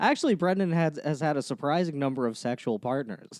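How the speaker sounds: ordinary talk, nothing marked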